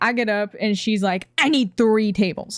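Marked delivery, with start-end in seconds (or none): 1.4-2.6 mock irritated woman's voice. Retelling a demand from an irritated visitor: imitating a pissy woman. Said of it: "She's all pissy with me".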